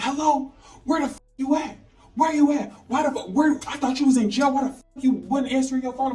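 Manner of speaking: mad, accusing, demanding angry rant. Recounting finally calling him back after many messages, imitating him being mad. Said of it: "mad at me".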